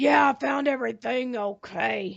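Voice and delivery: grisly voice, rough and creaky. Recalling a man's answer after being asked about his shopping, in a grisly Sling Blade voice. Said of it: "in his most grisly voice".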